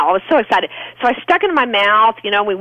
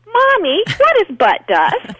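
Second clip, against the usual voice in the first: put-on very high, piping, sing-song little-girl voice; 10 semitones higher than usual. Mother retells her little girl piping up for everyone to hear, in a little girl voice. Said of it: "piped up in her little girl voice".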